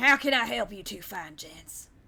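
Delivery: put-on rural country-ish accent. Voicing a character greeting two strangers in a game: country-ish voice. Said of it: "a country-ish voice".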